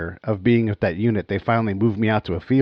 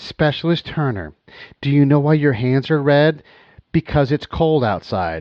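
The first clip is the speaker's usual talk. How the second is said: mock, super condescending, pitched-up lecturing tone; 5 semitones higher than usual. Retelling what a condescending superior said about red hands: imitating a condescending superior. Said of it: "super condescending".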